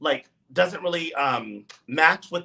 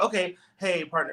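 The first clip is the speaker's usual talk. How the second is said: imitated forced, stiff, rehearsed-sounding delivery. You act out how Lux answered Lucy's line, imitating a forced, rehearsed delivery. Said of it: "sounded very forced and rehearsed".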